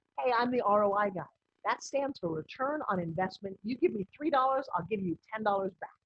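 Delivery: ordinary talk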